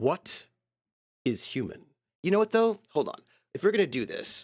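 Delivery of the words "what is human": grand, announcer-style documentary narrator voice. Deciding the text needs a good announcer voice, deliver it in a Carl Sagan space voice. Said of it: "that kind of like uh, space voice".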